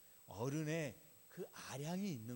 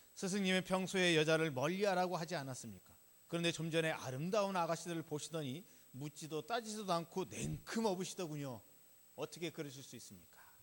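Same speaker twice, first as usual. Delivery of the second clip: loud, indignant, protesting tone. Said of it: "이렇게 따졌습니다".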